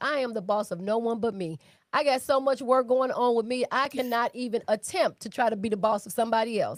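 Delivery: ordinary talk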